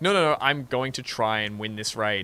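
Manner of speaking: normal talking voice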